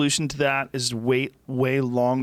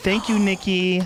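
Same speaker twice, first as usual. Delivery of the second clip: higher-pitched woman's voice; 5 semitones higher than usual. Joking about the other speaker's tone: audition lady voice. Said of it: "You sound like the lady who's in charge of the audition".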